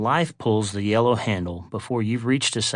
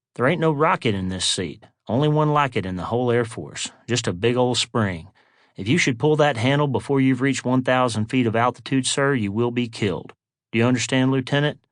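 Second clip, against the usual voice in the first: normal talking voice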